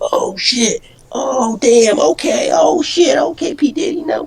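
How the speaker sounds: very high, super squeaky put-on voice. Retelling how he reacted to being promised a car at sixteen, super squeaky voice. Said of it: "super squeaky voice".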